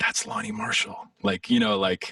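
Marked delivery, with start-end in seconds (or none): 0.0-1.0 hushed, very high half-whisper under the breath. Retelling what someone half-whispered under her breath across the table: imitating someone half-whispering. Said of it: "whispering under her breath to Tony".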